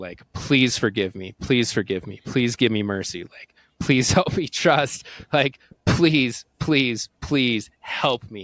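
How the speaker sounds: acted, desperate, begging plea. Speaker recounts kneeling and bowing to an entity: retelling begging for mercy. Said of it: "like begging for mercy".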